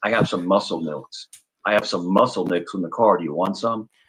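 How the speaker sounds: put-on very low, heavy, deep kid's voice. Retelling how the son offered drinks from the car: imitating son's low voice. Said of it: "he has a low voice, right?".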